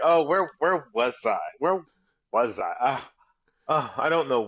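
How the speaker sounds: mock dazed, confused voice. Teasing about the man who lost track of place in Germany, mocking dazed imitation of him. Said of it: "See how he's like".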